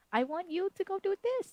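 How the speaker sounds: put-on high, babyish baby talk. Showing a way not to talk to them, in a baby voice. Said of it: "put on the baby voice and be like".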